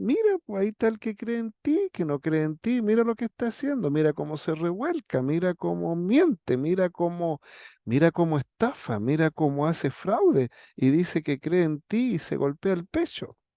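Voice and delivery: sarcastic, swooping, tattling tone. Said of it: "le dice sarcásticamente".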